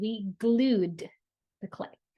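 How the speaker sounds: glued stressed hard. Repeating a child's sentence back with the right verb, stress on glued. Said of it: "I emphasized the correct way to say it".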